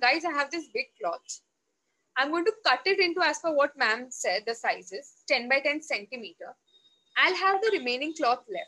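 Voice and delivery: plain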